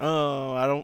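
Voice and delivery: put-on whiny voice. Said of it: "you might complain about".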